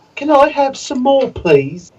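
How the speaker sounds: put-on very high British child voice.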